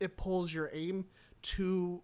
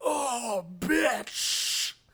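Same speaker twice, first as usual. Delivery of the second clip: high, loud yelp; 5 semitones higher, 5 dB louder than usual. Retelling what an enemy says when shot: imitating a shot game enemy. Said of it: "when he gets shot, he's like".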